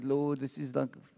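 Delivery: small, weary, put-on groaning moan. Retelling complaining to the Lord while walking with a backpack: retelling a moan. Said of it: "starting to moan a little bit".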